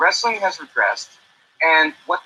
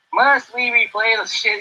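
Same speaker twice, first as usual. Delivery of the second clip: put-on American Southern accent, pitched up; 5 semitones higher than usual. Reading out another person's notes in a Southern accent. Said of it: "in Josh again's Southern accent".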